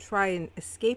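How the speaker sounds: ordinary delivery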